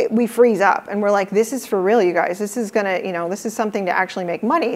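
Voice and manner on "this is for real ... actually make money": normal talking voice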